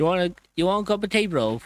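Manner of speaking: put-on British accent. Joking with others about being British: mock British accent. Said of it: "slap the back of my head if she ends up hearing me doing that".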